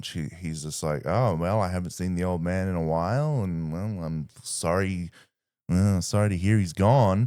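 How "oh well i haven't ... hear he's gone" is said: play-acted, feigned, casual, offhand nonchalant tone. Acting out a character told his old master is dead: feigned nonchalance. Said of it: "he tries to play it nonchalant".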